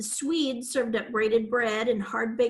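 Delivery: ordinary delivery, nothing marked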